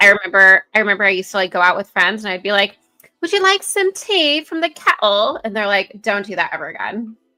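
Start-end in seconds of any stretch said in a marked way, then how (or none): 3.2-5.4 high, silly, goofy fake British accent. Recalling going out with friends and talking to them in a silly fake British accent. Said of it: "their British accents will come out".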